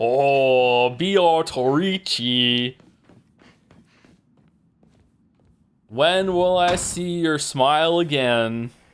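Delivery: put-on terrible American accent. Imagining how a line about beatrice would sound: worst american accent. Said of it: "the worst American accent".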